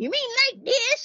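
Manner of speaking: very high, squeaky, comic put-on voice. Retelling doing a requested voice for family: Granny Smith voice. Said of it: "do your Granny Smith voice".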